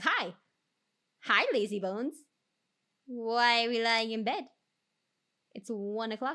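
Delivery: dog voice. Retelling being sick in bed, voicing the pet dog talking. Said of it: "And my dog being like".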